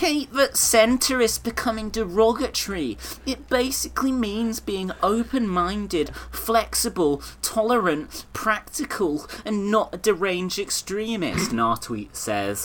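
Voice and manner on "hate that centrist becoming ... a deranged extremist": extremely whiny, annoying, drawn-out high voice. Reading out a newspaper man's tweet to mock it, in a put-on extremely whiny, annoying voice. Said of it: "I'll do an extremely whiny, annoying voice".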